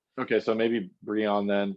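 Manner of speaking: ordinary talk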